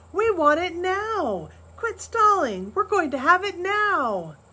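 very high, loud shout, now stretched out. One of the boys confronts pa about their pay, shouting. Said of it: "shouted again".

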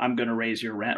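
ordinary talk, nothing marked

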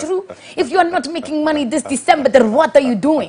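attempted Dutch accent. Quoting what Terry said outside church, in the speaker's best Dutch accent. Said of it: "that's my best Dutch accent".

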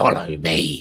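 loud, commanding, compelling monster voice. Game master voicing a creature giving a command to a player: changed creature voice. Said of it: "as the creature's voice changes and it utters the".

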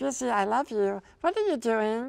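tiny, squeaky, very high little creature voice. Explaining the little voice he does to amuse himself, the speaker demonstrates it: little Stitch voice. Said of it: "this little voice that I do".

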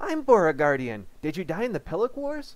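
loud, high-pitched, swooping sing-song voice. Narrator reads the company settlement officer's question, in a loud high-pitched Merrill voice. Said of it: "My name is [name], and I'm the company settlement officer. ... her voice loud and high-pitched enough to make the maggots in my eardrums wriggle crinkly".

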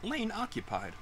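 high, soft robotic announcer voice.

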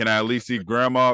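ordinary talk, nothing marked

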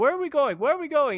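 put-on yelling. Speaker retells one man yelling at another as they pass the airport. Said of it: "he's yelling at him".

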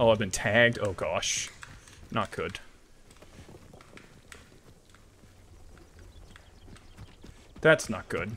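flustered, alarmed, caught-out panicking. Reacting to being tagged during gameplay, panicking. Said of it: "I'm panicking".

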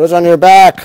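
loud, high startled shout.

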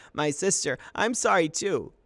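high, loud anguished yell of grief and terror. Falling from a canoe, calling back to his sister, yelling in grief and terror. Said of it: "he yelled in grief and terror".

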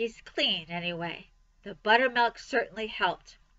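ordinary delivery

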